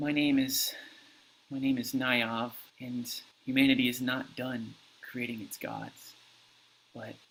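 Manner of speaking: weak, frail, strength-drained voice. Game master voicing a girl at a lectern addressing the players, in a weak voice. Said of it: "she says in a weak voice".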